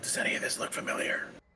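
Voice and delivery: spoken in a whisper. Asking whether any of this looks familiar while perceiving the area: whispering. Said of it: "I'm gonna whisper while I perceive the area".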